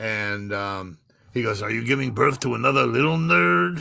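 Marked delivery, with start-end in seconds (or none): 1.6-3.8 mocking put-on comic dog voice. Retelling a comedy bit with the dog's insults, in insult comic dog voice. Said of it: "You got to use the dog's voice".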